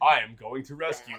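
proper 1950s sci-fi hero voice, growly undertone. Fans describing a character's voice, quoting him; proper 1950s sci-fi hero voice. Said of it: "It's like his voice is very like".

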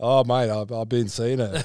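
put-on blokey voice. Retelling a guy's rant, doing his bloke impression. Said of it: "he could do like a real good bloke impression".

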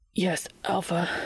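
breathless, trembling voice. Reading a romance scene where a character answers, breathless and trembling. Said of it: "more breathlessly, voice trembling".

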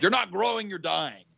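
put-on macho tough-guy voice, rushed. Recalling how he used to quote a motto, putting on his tough man voice. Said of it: "I would get my tough man voice on and I would say".

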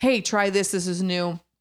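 ordinary talk, nothing marked

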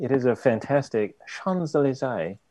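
odd, vaguely Australian accent, half Cockney. Describing a boulevard in the game, slipping into a kind of australian accent. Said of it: "there it goes again".

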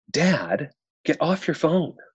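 put-on high sweet child voice. Retelling what a girl at the park said to her dad, imitating a sweet little girl's voice. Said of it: "says in the sweetest little voice".

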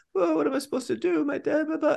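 very high, teary, sobbing, whimpering crying voice. Speaker describes a film character turning against her dad, imitating someone crying. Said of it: "she's literally crying".

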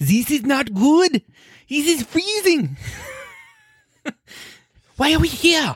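high-pitched, slow, complaining voice.

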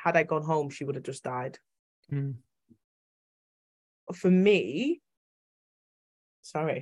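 tearful, welling-up teary voice, close to crying. Speaker recounting a near-fatal intensive-care emergency, tearing up. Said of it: "I'm literally tearing up now".

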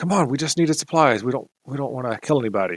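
loud shouted whisper, half voiced. A character calls to the man closest to him: whisper-yelling. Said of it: "he kind of whisper yells".

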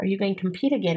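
imitated whisper. Retelling what the pageant director said in a hug goodbye: imitating Kelly's whisper. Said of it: "he whispers in my ear".

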